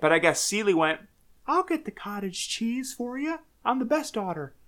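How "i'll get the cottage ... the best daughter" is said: pitched way up and kept soft. Speaker quotes a daughter, in a Mickey Mouse-like voice. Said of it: "does she sound like Mickey?".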